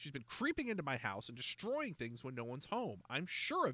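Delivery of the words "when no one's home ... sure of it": plain reading voice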